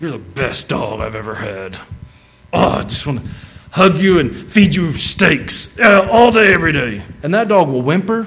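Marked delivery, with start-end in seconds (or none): 0.0-7.0 slow, harsh, nasty mean voice, rising in pitch. Saying kind words to a dog: mean voice. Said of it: "in a mean voice".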